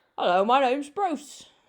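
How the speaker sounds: bad, loud, put-on Australian accent. Saying he never saw himself as a big bruce type, bad australian accent. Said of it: "That was a poor that was a very poor shark Australian accent on my part".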